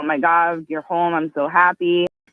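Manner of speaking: mock frantic crying with tearful relief. Retelling how mom and sister greeted them at home: imitating frantic crying. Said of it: "they're frantically crying".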